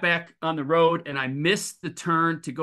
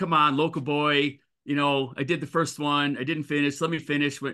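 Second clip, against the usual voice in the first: usual speaking voice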